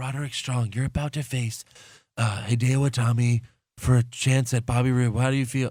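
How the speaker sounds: put-on whispering voice. Retelling how the new interviewer asked her question: imitating someone whispering. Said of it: "the new chick interviewing them was, like, whispering".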